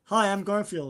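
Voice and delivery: just a normal, everyday talking voice. Mocking an actor's voice role: Chris Pratt's Garfield voice. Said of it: "Chris Pratt, do your Garfield voice".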